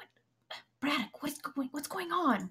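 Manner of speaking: trying to be quiet. An impatient character walks up to a companion, trying to be quiet. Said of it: "she's still trying to be quiet".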